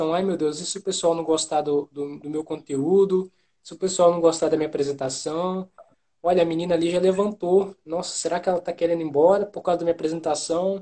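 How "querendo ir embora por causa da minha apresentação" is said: ordinary talk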